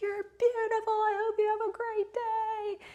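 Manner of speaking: high, yelled, called out from far off. Retelling a compliment from a stranger far down the street: imitating a stranger yelling. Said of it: "just yells at me".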